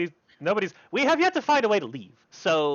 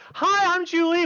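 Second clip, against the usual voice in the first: very high, loud, gushing, enthusiastic eager tone; 13 semitones higher, 5 dB louder than usual. Voicing a character who grabs a newcomer's hand: very enthusiastic greeting. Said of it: "very enthusiastically, like".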